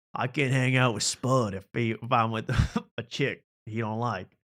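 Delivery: put-on Southern drawl accent. Joking in a mock bigoted persona about a disliked partner: put-on Southern accent. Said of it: "that got into Southern accent for a second".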